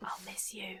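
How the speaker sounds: very quiet, soft whisper, barely there. Saying goodbye to a slug about to be launched: whispering. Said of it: "I'll whisper".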